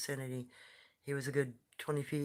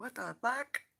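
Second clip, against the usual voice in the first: tiny, sweet, cute, very high-pitched little voice; 9 semitones higher than usual. Retelling the answer the little one gave him, in a cute little voice. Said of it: "in a very cute little voice".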